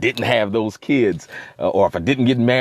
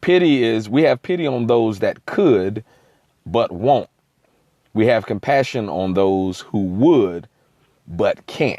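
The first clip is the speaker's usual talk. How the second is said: very slow, deliberate, word-by-word pacing. The speaker reads out what they wrote down so someone can get it, very slowly. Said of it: "I'll say it very slowly".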